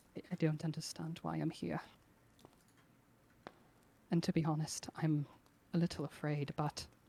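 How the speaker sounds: quiet, hushed muttering, half to himself. Voicing Kothar alone by a rock, quietly muttering in character. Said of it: "just kinda quietly mutters to himself".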